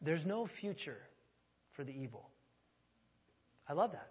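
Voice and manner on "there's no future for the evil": soft, hushed, put-on refined smart accent. Quoting a favorite saying of a pastor from Modesto, imitating the pastor's smart accent. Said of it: "he says in his smart accent".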